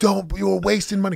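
loud, high angry yelling. Retelling yelling at the kids about pouring too much milk: retelling yelling at kids. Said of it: "I'm yelling".

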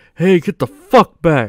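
angry, held-back telling-off tone. Retelling a clip of someone snapping at paparazzi: imitating Tom Hanks yelling angrily. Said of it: "and he's like".

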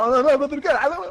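panicked shouting.

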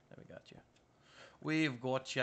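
put-on Scottish accent. Reassuring someone during a tense task and drifting into an accent, speaking with a Scottish accent. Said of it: "I don't know why I've developed another accent".

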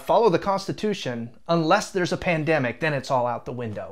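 ordinary talk

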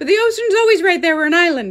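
fast, terrible put-on Irish accent. Retelling a car trip, the speaker quotes a man's reply, terrible Irish accent. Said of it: "Sorry for my terrible Irish accent".

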